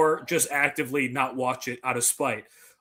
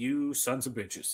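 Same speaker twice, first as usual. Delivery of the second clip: put-on demon voice, quieter; 2 semitones lower, 9 dB quieter than usual. Retelling a movie scene where people escape: imitating the main demon. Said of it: "the main demon is like".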